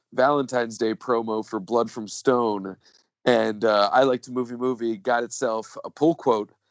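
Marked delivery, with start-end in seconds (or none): none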